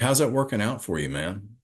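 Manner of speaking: irritating, mocking, sarcastic needling tone. Retelling what old timers in recovery ask with a grin: imitating a sarcastic grinning question. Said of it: "it seems like a sarcastic".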